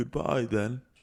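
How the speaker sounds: put-on elderly man character voice. Retelling a game story, the old man says goodbye in put-on old man voice. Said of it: "That's my old man voice".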